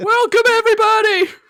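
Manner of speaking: very loud, high, shrill stand-up belting voice. Echoing the other speaker's welcome to everybody: Jerry Seinfeld impression. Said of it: "is that your Seinfeld impression?".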